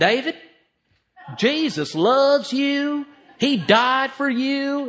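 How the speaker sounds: very high, slow, drawn-out country twang. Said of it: "talked with a twang in his voice".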